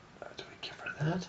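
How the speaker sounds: soft, hushed, unvoiced whisper.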